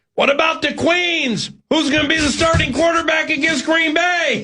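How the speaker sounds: high, shouted jeering holler. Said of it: "some rube running alongside you yelling".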